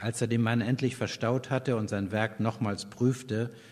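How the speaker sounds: plain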